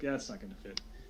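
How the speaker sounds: soft, sarcastic tone. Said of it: "She says it sarcastically".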